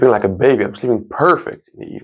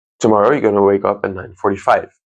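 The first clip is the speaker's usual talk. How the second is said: normal talking voice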